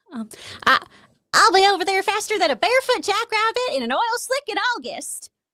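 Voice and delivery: very high, slow, drawn-out voice. Answering a request for a Sandy Cheeks impersonation: Sandy Cheeks impersonation. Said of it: "give me your best Sandy Cheeks impersonation".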